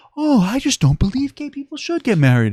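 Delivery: put-on sweet, very high, sing-song baby talk. Demonstrating the tactic the speaker criticizes, in a baby talk voice. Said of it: "baby talk".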